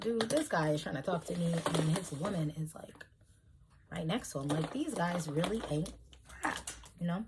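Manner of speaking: soft, hushed half-whisper under the breath. Retelling what was said to a cousin on the dance floor: imitating own half-whisper. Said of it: "I whispered it to my cousin".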